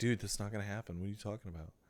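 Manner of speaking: very quiet, very low, fast, hushed doubtful mutter. Mocking viewers who took a joke seriously: imitating a doubtful viewer. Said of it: "some of you are like".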